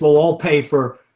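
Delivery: ordinary delivery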